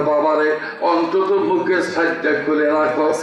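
plain

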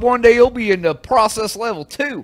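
fake Southern accent, drawled. Imitating the boss praising claim processing: imitating Neil with a little drawl. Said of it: "He had a little drawl".

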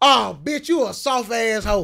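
put-on screaming. Describing a man yelling at a basketball game on TV, imitating screaming at the TV.

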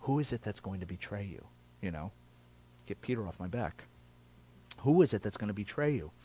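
hushed, soft, secretive undertone. Imagining the question asked in secret while reclining together, in a hushed tone. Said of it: "probably in a hushed tone".

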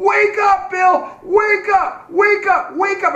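screaming, very high, shrill and drawn out. Retelling his crew screaming at him out of their window: retelling crew screaming. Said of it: "they're screaming at me".

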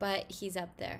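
ordinary delivery

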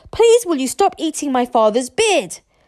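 loud, high, full-volume yelling with full force. Told to yell very loudly, Hiccup calls out to Toothless, yelling as loudly as possible. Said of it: "Hiccup yelled as loudly as he could".

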